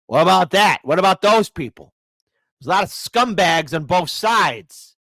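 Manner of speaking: angry, heated voice, temper boiling over. Asking a string of rhetorical questions, getting angry. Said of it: "Sorry, I'm just getting angry".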